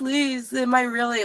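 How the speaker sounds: shaky pleading voice. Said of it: "shaking on the phone".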